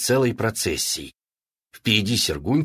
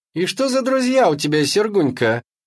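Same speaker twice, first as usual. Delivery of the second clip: very high, jeering, mocking taunting voice; 9 semitones higher, 4 dB louder than usual. Zoyka answers Sergunka as he places his order; mocking. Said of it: "насмешливо сказала Зойка".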